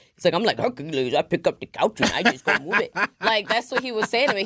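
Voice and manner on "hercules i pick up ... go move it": casual, plain natural man's talking voice. Speaker retells how a guy explained helping women: imitating Benjamin's voice. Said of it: "That was his literal voice".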